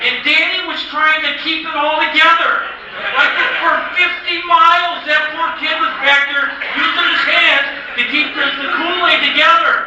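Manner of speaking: high, loud delivery, laughing throughout.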